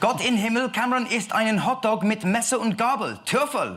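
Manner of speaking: put-on German accent, very high pitch. Trying out German despite never having studied it: German accent. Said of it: "Best German accent now".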